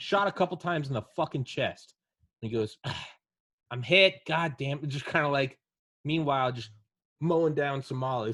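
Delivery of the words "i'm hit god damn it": raised, mildly irritated, more bothered than pained. Retelling what he said after being shot, mock-irritated. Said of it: "It sounded like he was a little irritated".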